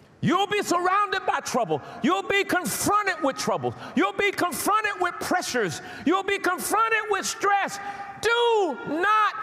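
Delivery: high, loud, excited preacher-style screaming.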